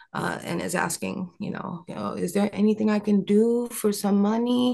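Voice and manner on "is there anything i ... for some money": put-on Romanian accent in English. Retelling what a woman asking for money said: imitating a romanian accent. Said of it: "I don't know if that's a Romanian accent".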